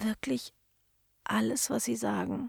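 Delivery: soft, high, breathed-out words. A girl trying to talk her way out of trouble with him, breathed.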